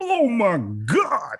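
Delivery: wild, frenzied sports announcer outburst. Retelling the announcer's reaction to a dunk: imitating an announcer going insane. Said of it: "the announcers went insane".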